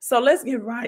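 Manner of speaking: voice cracking mid-phrase. Video host moving into the topic after greeting viewers, voice cracking. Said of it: "my voice cracked".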